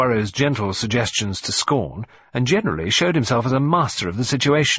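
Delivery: plain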